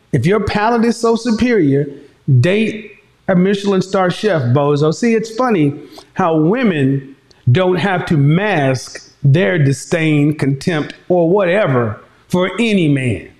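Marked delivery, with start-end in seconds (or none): none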